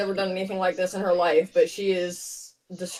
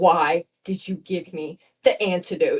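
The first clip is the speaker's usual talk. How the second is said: seething, furious voice with boiling rage; 2 semitones lower than usual. Speaking as Maxine, turning on Kelly, seething. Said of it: "she's like seething at her".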